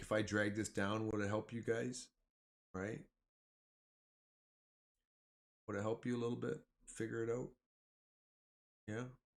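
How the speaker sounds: condescending, patronizing, talking-down tone. Asking the viewers if dragging something down helps them: condescending tone. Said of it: "That sounded very condescending".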